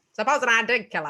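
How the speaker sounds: put-on 1950s movie villain voice. In a comedic bit, in a 1950s evil villain voice. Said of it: "It's like evil villain shit".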